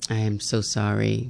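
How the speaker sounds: overdone, exaggerated sorry voice, very low and hushed. Apologizing to another speaker; exaggerated sorry voice. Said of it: "That was my sorriest voice I could give you".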